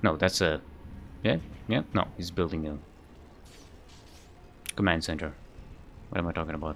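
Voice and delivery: soft, quiet mumble under the breath. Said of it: "Sorry, I'm just mumbling".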